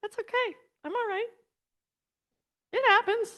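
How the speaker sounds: speaking through tears. Telling listeners it's okay that they are crying; crying while speaking. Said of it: "I am crying".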